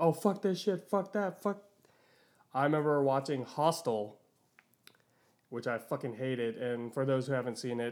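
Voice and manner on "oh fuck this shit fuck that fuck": put-on, high, frantic freaked-out yell. Recalling how you usually freak out with a group, acting out the yelling. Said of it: "yelling like".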